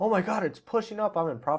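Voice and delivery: high, gushing, overexcited freaking-out exclamation. Mocking a trader who panics when price goes up: mock freaking out. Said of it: "freaking out when it's going up".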